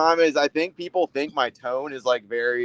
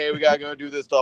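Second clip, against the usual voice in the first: ordinary talk, nothing marked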